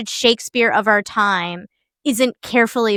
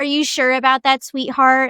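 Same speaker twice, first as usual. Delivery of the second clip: put-on creepy voice, faster; 4 semitones higher than usual. Describing a young man who might say it creepily; imitating a creepy guy. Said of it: "someone who would say that in like a creepy way".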